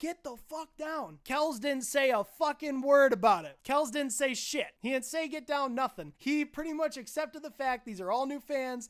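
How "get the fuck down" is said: loud, shouted delivery. Retelling a concert, yelling at everybody: retelling yelling at the crowd. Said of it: "I'm yelling at everybody like".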